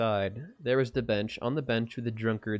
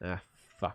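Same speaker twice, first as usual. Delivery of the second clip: murmured under the breath, lower and quieter; 4 semitones lower, 7 dB quieter than usual. Reading a game's story aloud, a character swears: murmured under his breath. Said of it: "Bartek murmured under his breath".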